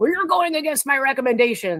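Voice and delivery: loud lawyer voice. Retelling how her lawyer stood up at her jury trial, loud lawyer voice. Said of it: "in his loud lawyery voice".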